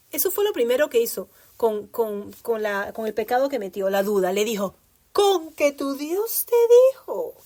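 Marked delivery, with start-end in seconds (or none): 5.1-7.3 play-acted gossipy tone, high and drawn-out. Quoting the devil sowing doubt in Eve: the devil's gossipy tone. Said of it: "así con ese tono de chisme".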